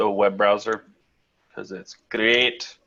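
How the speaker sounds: sarcastic delivery. Answering a question about the Zoom client: sarcastic. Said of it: "He says sarcastically".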